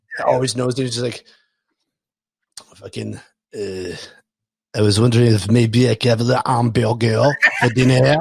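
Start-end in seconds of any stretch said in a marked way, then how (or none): 3.5-8.1 put-on snooty French accent, lower and slower. Imagining a cat with a Parisian accent asking for dinner: snooty French-accented cat voice. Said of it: "a cat that has a French accent".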